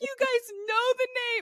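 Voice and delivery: tearful, about to cry, very high voice. Retelling how the listener reacted after saying too much: imitating someone near tears. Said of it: "almost started crying".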